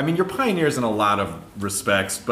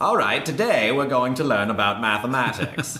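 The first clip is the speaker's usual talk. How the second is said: put-on old man voice, old-timey like a forties recording; 2 semitones higher than usual. Imitating a man heard on old recordings from the 40s, talking like an old man. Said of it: "he always talks like an old man".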